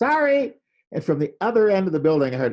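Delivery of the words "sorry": high, loud shouting. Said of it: "I just yelled".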